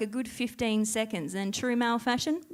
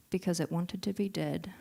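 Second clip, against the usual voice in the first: bone-dry, low, quiet deadpan; 5 semitones lower, 5 dB quieter than usual. On stage, retelling a niece's answer to a joke-book riddle, imitating her deadpan. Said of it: "deadpan, fucking without skipping a beat".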